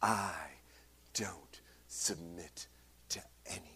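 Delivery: scornful, angry, breathy, disdainful whisper. Retelling someone's retort during a conversation about faith: imitating disdainful anger. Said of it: "utter disdain and anger in her eyes and in her voice".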